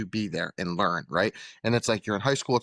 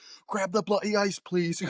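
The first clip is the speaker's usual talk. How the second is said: very high, furious screaming; 11 semitones higher than usual. Retelling a chef screaming for ice: imitating Gordon Ramsay screaming. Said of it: "He starts fucking screaming at him".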